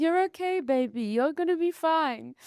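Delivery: put-on French accent. Retelling how Heloise held her hand and comforted her, Heloise's French accent. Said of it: "in her like um French accent".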